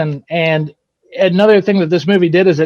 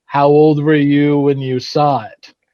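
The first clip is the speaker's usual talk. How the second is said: put-on deep baritone voice; 3 semitones lower than usual. Retelling what an actor said when met at a convention: Tony Todd baritone voice. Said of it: "in his wonderful Tony Todd baritone voice".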